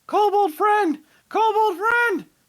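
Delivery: very loud, very high, shrill joyful yell. Player voicing Bard greeting another kobold, shouting excitedly in Draconic. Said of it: "He's gonna start shouting in Draconic".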